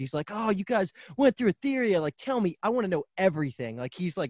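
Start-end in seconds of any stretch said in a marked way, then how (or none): 0.3-3.8 mock thrilled, high, hyped-up can't-wait eagerness. Retelling a character's reaction in a show: imitating Bill's hyped excitement. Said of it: "extremely happy about it".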